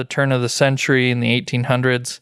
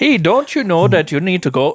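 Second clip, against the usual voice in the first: higher, put-on Wisconsin Midwest accent; 6 semitones higher, 3 dB louder than usual. Riffing with others on how a greeting sounded, the speaker slips into a put-on Wisconsin accent. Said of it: "accents just keep going and going".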